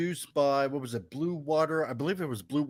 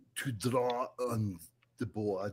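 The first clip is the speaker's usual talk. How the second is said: put-on deep, low, very slow, drawn-out German accent; 5 semitones lower, 7 dB quieter than usual. Trying to say the drawing line like Werner Herzog. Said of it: "that's a good Arnold".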